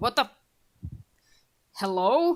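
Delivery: put-on elderly man's calling voice. Game master voicing an old man calling out, old man's voice. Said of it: "You hear an old man's voice just kind of call out".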